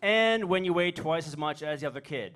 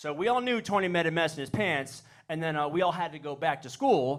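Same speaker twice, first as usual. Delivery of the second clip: plain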